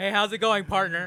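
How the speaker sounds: very loud, booming, hearty, buddy-buddy voice. Imitating a local police officer greeting a rich neighbour: imitating a police officer greeting a rich man. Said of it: "over in his nice fucking thirty million dollar house and goes".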